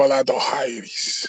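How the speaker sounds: fake Russian-accented speech. Showing how Joachim says a name, imitating Joachim's Russian accent. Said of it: "you gotta say it like Russian, like you Russian".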